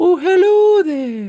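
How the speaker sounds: put-on very high Scottish accent. Explaining Americans' idea of the female Scottish accent, doing Mrs. Doubtfire. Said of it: "can't do the Scottish accent with my voice going".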